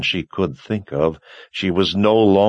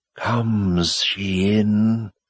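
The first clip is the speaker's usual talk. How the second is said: hissed, hissing voice. A voice from a dark cave speaks as Anne approaches, hissing voice. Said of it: "the voice hissed".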